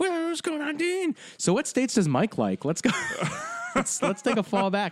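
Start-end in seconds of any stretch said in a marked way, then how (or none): 0.0-1.2 put-on very high-pitched old-timey newsreel-style voice. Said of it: "that was my throwback voice for that".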